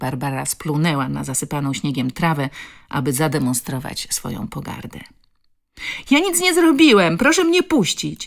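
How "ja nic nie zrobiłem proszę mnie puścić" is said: very high, shrill, brash defiant outcry. A boy confronted by Barbara calls out defiantly. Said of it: "zawołał chłopak buńczucznie".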